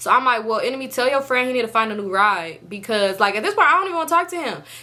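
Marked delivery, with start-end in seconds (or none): none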